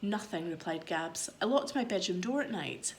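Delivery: ordinary delivery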